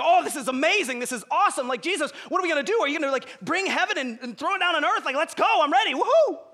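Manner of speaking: mock giddy, high, excited, eager chatter. Retelling the followers' reaction after jesus rose from the dead: imitating giddy followers. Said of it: "kind of, like, giddy".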